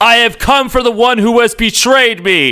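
very high, dramatic scream pitched way up. Recapping a scene where Magneto arrives, acting out Magneto screaming. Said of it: "he screams".

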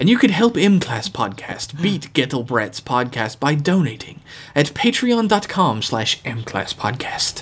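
put-on British accent. Reading a podcast donation promo as a comic bit, Stephen Fry impression. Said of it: "it was British".

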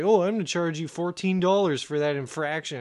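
ordinary talk

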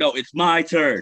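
drawn-out, very loud, slow, high-pitched yelling. Retelling a TV clip where Shannon Sharpe cuts in: imitating Shannon Sharpe yelling. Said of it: "yelling, he's like".

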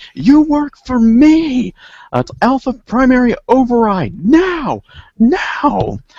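very high, shrill, swooping screaming. Narrating a game scene, narrator voices the agent screaming at the robot. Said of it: "The agent is screaming".

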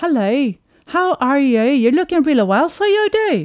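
Northern Irish accent. Showing how she speaks English, with a Northern Irish accent. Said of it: "jag pratar engelska med nordirländsk brytning".

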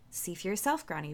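ordinary delivery

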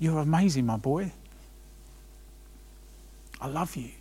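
soft, intimate whisper, close in. Imagining God pulling his son close to his ear: whispering as God. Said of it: "whispered in, in his ear".

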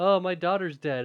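play-acted glum, depressed, self-pitying mope. Retelling a movie scene after his daughter dies: imitating a depressed character. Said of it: "he's all depressed and is like".

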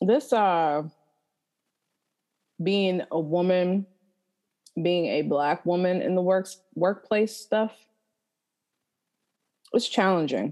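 chewing while talking, mouth full. Talking about the workplace while eating a cookie: chewing while talking. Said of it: "I hope y'all cannot hear me chewing".

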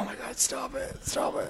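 breathy, hushed whispering. Retelling a kid screaming down the aisle, imitating the mom. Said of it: "the mom's like".

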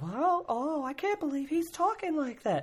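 very high crowd-member voice. Showing the voice a comedian uses as the audience: Jim Gaffigan's audience voice. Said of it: "that voice you heard where he does, like, the voice of the audience".

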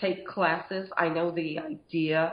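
slow speech, voice breaking and cracking. Speaker giving advice to listeners, voice cracking mid-sentence. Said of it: "my voice cracked".

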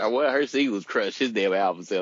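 ordinary talk

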